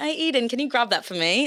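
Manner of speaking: put-on British accent. Speaker showing their habit of asking favours when awkward, in a British accent. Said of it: "This is actually good".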